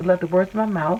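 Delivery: ordinary delivery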